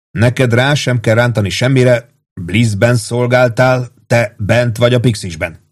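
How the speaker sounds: plain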